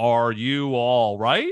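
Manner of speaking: mechanical robot voice, slow and loud. Imitating how he asks Ellie if she's all right, flat robotic voice. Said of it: "He says it like like a robot".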